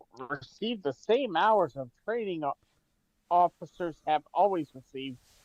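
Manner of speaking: ordinary talk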